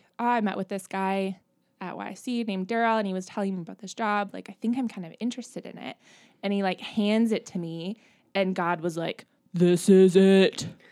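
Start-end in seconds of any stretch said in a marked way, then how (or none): 9.5-10.7 horrible, very loud booming voice at full blast. Retelling being handed a job, and God's reaction; horrible God voice. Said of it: "that's my horrible god voice".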